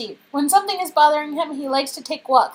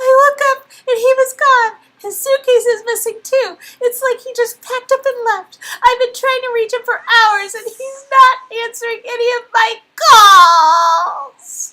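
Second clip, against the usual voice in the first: high-pitched, tearful voice, weeping through the words; 8 semitones higher, 4 dB louder than usual. Nadia speaks to someone who has just stepped into her room; tearful, crying. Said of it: "whose cheeks stream wet with tears. / whose cheeks stream wet with tears".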